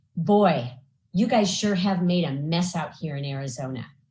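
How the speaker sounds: confiding, just-between-us tone. Retelling what a woman leaned in and said to her; imitating a lowered, confidential voice. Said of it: "lowered her voice and sort of confidentially said".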